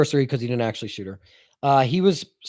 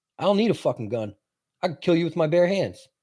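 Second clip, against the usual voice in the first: mock angry, menacing, pissed-off threatening voice; 2 semitones higher, 4 dB quieter than usual. Retelling a witness answering a lawyer's questions: imitating an angry witness. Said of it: "You can tell he's getting pissed".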